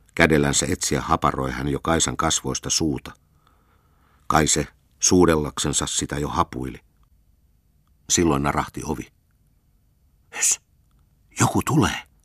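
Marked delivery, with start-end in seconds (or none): 10.4-12.0 urgent high-pitched whisper. Reading Kaisa's line to Pekka as the door creaks, whispering. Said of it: "kuiski Kaisa".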